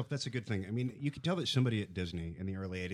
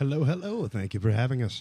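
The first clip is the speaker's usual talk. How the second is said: loud on-air radio announcer voice; 3 semitones higher, 7 dB louder than usual. A guest greets the hosts on arrival: radio voice. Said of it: "You said you weren't going to do your radio voice".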